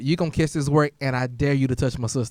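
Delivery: plain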